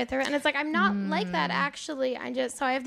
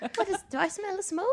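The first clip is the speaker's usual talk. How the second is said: put-on prim English schoolmarm accent, high; 6 semitones higher than usual. Picturing yourself with a tight bun, in an English schoolmarm accent. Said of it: "That was a great accent".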